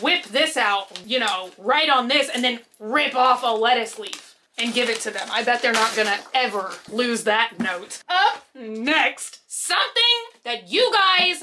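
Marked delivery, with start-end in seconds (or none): 8.1-11.4 high, thrilled, excited yell with "next" stretched out. Introducing the next item to the audience, excited yelling. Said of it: "I'm yelling because I'm that excited".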